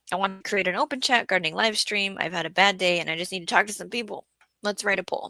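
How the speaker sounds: normal talking voice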